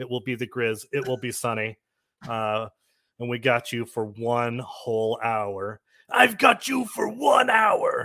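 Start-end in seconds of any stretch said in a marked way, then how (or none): 6.1-8.1 very loud, very high, belted wrestling-style yell. Opening the podcast with a wrestling joke: Macho Man impression. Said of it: "That's my Macho Man impression".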